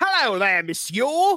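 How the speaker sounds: slowed fake Cockney accent. Mocking movies where French characters speak British, Les Miserables Cockney accent. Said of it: "Everybody's got a Cockney British accent".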